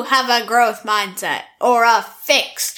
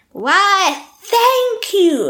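over-the-top, pitched-up fake British accent; 9 semitones higher than usual. Describing how she takes compliments: outrageous fake british accent. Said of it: "And an outrageous fake British accent".

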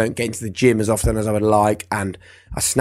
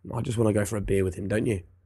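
ordinary talk, nothing marked

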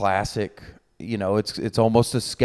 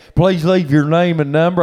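put-on higher-pitched Southern accent; 8 semitones higher, 7 dB louder than usual. Imitating an uncle's voicemail greeting: imitating uncle's Southern accent. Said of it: "I can hear that in your voice".

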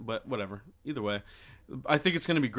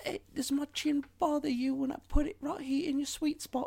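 very high-pitched, fake, put-on English accent; 3 dB quieter than usual. Retelling what he says while nuzzling her, in an English accent. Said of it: "English accent".

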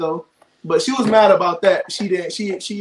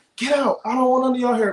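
put-on girl yelling, much higher; 5 semitones higher than usual. Retelling how she yelled at everybody in the house: imitating Parker yelling. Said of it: "she yell at everybody".

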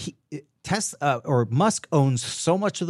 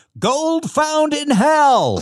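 very high, very slow, drawn-out shout; 13 semitones higher, 7 dB louder than usual. Telling a joke where a gold miner shouts to the crowd: retelling a shout in a joke. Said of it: "he shouts".

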